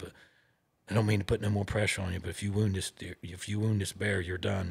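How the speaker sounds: hushed whisper. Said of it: "George comes back down and whispers in my ear".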